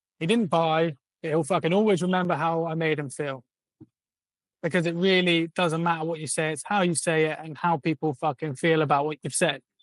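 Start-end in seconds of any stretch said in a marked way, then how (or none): none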